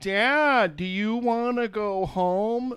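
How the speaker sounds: very slow, loud, stretched-out condescending yell. Describing the mother in a dinner scene yelling at the grandfather, mock condescending yelling. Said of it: "condescendingly yelling at the grandfather like he's deaf".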